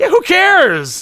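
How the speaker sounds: high, loud, slow, carefree, dismissive. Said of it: "I'm like".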